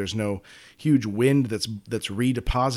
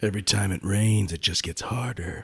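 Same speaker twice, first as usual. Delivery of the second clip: put-on Old West tough guy voice; 2 semitones lower than usual. Playing a bit with co-hosts, the speaker uses a tough guy voice. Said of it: "we're so into these like tough guy voices".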